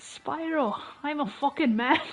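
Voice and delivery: put-on satyr voice with an Irish-sounding accent. Asked by the other speaker to impersonate the satyrs, doing a satyr impression. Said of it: "try to do an impression of the satyrs".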